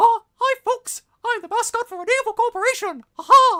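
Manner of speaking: very high, loud, drawn-out cartoon voice. Asked to show off impressions, doing a Mickey Mouse voice. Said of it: "That was Mickey Mouse".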